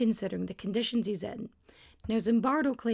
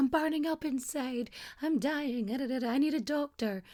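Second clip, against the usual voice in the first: fake, put-on nervous breakdown; 3 semitones higher than usual. Retelling how a prisoner faked a breakdown to leave: imitating a faked breakdown. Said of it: "starts faking this breakdown".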